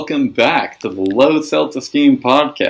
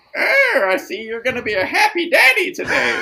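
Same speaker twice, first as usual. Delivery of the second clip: put-on very high elderly old lady voice; 9 semitones higher than usual. Retelling what the old lady at the grocery store said: ninety-year-old voice. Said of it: "you did a ninety year old voice".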